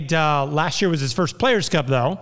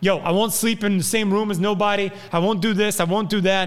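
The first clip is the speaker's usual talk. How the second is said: put-on heavy New York accent, laid on thick, pitched up; 5 semitones higher than usual. Acting out a man who comes in and refuses to share a room, in Rich Doybin's thick New York accent. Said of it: "He's got like this thick New York accent".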